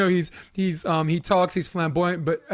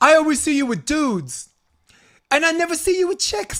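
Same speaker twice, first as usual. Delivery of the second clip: put-on very high, small voice with Jersey accent; 10 semitones higher, 4 dB louder than usual. Retelling what Michelle asked while drunk: Michelle's little Jersey accent. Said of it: "her little Jersey accent".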